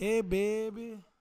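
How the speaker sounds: put-on New Orleans drawl, long drawn-out baby. Told to go ahead and read the whole thing, start in a New Orleans accent. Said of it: "read the whole thing in the New Orleans accent".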